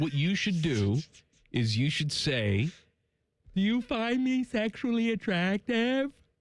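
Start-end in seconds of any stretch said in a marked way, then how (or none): 3.5-6.1 pretend open-mouth mumbling, pitched higher. Suggesting a line to ask the hygienist: fake mumbling with mouth open. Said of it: "With that voice".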